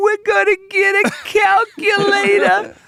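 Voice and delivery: put-on thick New York accent, very high, very slow. Describing the younger brothers in a comedy sketch, thick New York accent. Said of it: "No one else in the scene has an accent".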